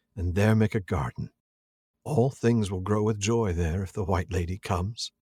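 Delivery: normal talking voice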